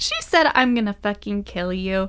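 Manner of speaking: put-on yell, toned down from loud. Retelling what she yelled in front of everyone: retelling a loud yell. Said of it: "she just yells like loudly in front of everyone".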